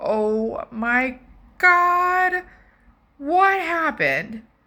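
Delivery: acted, high, drawn-out, shocked scream. Retelling finding the dogs covered in blood: imitating own past scream. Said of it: "And I screamed".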